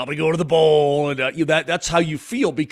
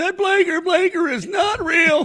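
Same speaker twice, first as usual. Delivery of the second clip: mock crying like a girl, higher. Retelling what a crying girl on an airplane said: imitating a crying girl. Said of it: "She's sort of crying there".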